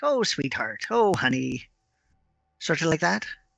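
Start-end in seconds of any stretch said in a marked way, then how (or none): 0.0-1.6 fond doting mothering tone, swooping and slow. Imitating the way a mother talks to her child: imitating a doting mother. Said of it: "a mother will be all like".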